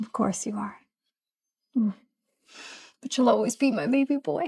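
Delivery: tearful speech through crying. A mother answers her son, who says he is grown up, crying while talking. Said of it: "Why are you crying?".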